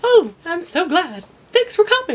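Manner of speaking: very high, loud, swooping polite service voice. Showing how a woman's professional polite voice sounds: higher professional polite voice. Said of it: "women's professional polite voice is just a little higher".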